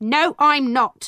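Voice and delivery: speaking in anger. A mother, asked by the judge if she is a witch, answers: angry. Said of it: "my mother answered angrily".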